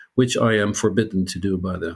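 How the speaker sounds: normal talking voice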